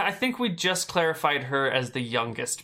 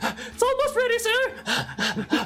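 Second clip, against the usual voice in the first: very high, winded, out-of-breath little gnome voice. Describing a bar, the narrator voices a gnome pouring beer: out-of-breath gnome voice. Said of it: "there's like an out of breath gnome".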